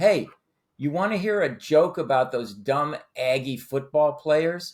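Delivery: mock, loud announcing voice. Telling a story, quoting a man at a bar offering a joke: loud voice. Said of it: "he says in a loud voice".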